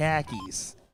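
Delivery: put-on Boston accent. Joking between darts commentary, trying out a put-on boston accent. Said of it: "but with the accent, so it sounded like car keys".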